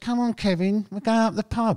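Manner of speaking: very high, near-squeaky voice. Retelling a fishing friend calling Kevin to the pub, in Roger's almost squeaky voice. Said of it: "almost squeaky voice".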